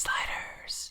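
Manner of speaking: soft, hushed mock whisper.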